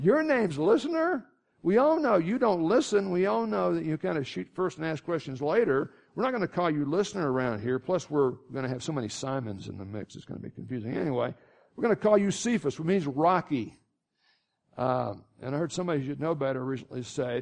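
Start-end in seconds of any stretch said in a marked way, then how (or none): none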